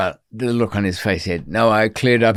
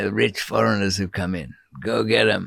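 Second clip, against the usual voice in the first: put-on Mexican accent; 3 dB quieter than usual. Quoting the prison deputy governor's order about foreigners, in a put-on mexican accent. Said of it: "I'm using a Mexican accent for that".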